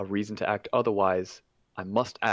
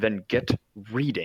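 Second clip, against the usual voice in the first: snarling, snapping voice. Voicing a frustrated, irritated character who snaps at Esmeralda: snarling. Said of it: "with a snarl and a gr-, ... glare, he snaps".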